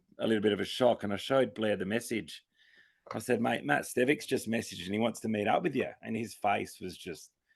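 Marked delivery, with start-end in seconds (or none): none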